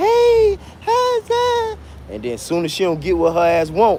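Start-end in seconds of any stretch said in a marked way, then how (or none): 0.0-1.8 put-on shrill squeak, very high-pitched. Mimicking how a woman talks to get her way, fake high-pitched squeaky voice. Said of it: "that fake ass high pitched squeaky voice".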